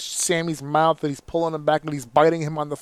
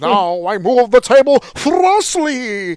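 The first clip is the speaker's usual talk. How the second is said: put-on hammy stage-actor voice, higher and louder; 8 semitones higher, 9 dB louder than usual. Mocking a wrestling match as theatre like Hamlet: Clayface voice. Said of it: "I'm using my clay, my Clayface voice now from Harley Quinn".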